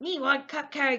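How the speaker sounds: puppet monster voice. Narrating a story where one kid wants another kid's cupcake, Cookie Monster voice. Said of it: "That's Cookie Monster who talks like that".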